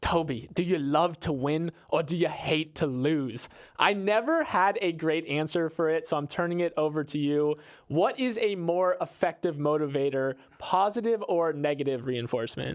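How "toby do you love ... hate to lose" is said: imitated British accent. Quoting what his old soccer coach always used to say, in a put-on british accent. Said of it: "so this is my British accent".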